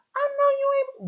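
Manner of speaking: very high, drawn-out, strained register. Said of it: "whenever someone makes you be like".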